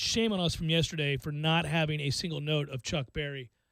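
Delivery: ordinary talk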